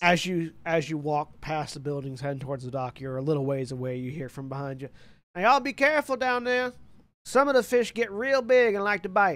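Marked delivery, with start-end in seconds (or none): 5.3-9.4 very high, loud, raised call-out. Voicing Bubba calling a warning after the players from behind. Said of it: "as Bubba heads off".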